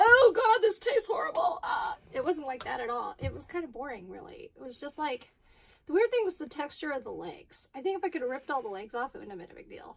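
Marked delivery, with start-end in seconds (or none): 0.0-1.6 loud, high mock disgusted outcry. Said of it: "put it in my mouth and went".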